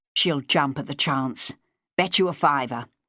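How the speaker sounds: plain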